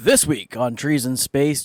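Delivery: put-on show-host announcer voice. Opening the show's episode intro, announcer voice. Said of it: "he just threw the whole announcer voice in there".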